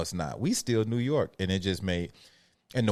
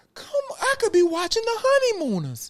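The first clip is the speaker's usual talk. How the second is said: pitched very high, swooping complaint tone; 5 dB louder than usual. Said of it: "he was like".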